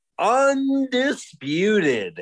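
undisputed stretched out, slow and high.

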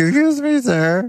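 put-on very high cracking teen voice. Imitating the teenager on The Simpsons: teenager on The Simpsons voice cracking. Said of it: "The teenager on The Simpsons is always like".

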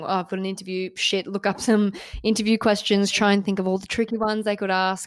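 usual speaking voice

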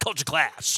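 sounding mad. Showing the audience how to say the series title, like you're mad about it. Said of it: "say it like you're mad about it".

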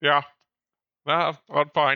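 speaking with a full mouth. [name] answers Jess asking if she's okay, with a mouthful of tuna. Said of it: "As with a mouthful of tuna".

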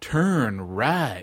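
low, sultry, seductive sexy woman's voice. Retelling a GPS app's audio directions: imitating a sexy woman's voice. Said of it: "this real, uh, uh, sexy woman going".

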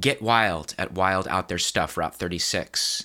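plain

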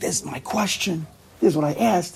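eager, worked-up, high, excited delivery. Retelling a student finding his question in the notes: imitating someone excited. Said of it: "And he was so excited".

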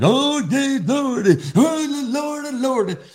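very high, very slow, fervent pastor's praying voice. Describing a conference speaker, imitating a pastor praying. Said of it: "Great impression".

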